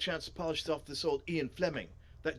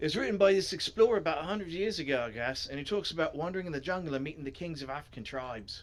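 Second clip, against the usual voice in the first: put-on Australian accent. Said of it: "why did I make him Australian".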